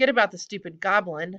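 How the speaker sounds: ordinary delivery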